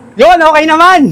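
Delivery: yelling in a loud, high-pitched shout. A guest answers the host asking how he is, shouting. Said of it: "Ba't ka sumisigaw?".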